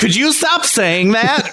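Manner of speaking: high-pitched, snippy, catty woman's voice. Retelling a woman telling the speaker to stop: imitating a bitchy woman. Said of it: "bitchy woman".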